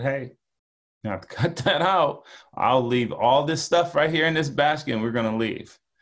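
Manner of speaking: acted calm, composed voice, spoken quickly. Retelling how the speaker told a screaming girl to stop, retelling a calm voice. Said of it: "And I was real calm".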